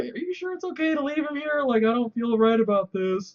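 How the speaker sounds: high, nervous, put-on fretting voice. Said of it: "and he's like".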